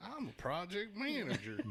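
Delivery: put-on soft southern US accent. Acting out scolding a colleague about an email: southern accent. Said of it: "Why did I turn southern all of a sudden?".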